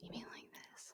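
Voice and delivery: mock whispering. Answering a complaint about whispering videos: mock whispering. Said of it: "I can't deal with the whispering".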